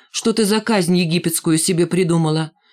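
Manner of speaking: ordinary talk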